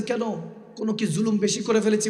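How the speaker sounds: normal talking voice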